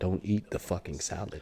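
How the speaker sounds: slow, deadpan, dead-serious, stone-cold tone. Retelling her warning not to eat the salad: imitating a straight-faced warning. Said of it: "she's got a straight face looking at you".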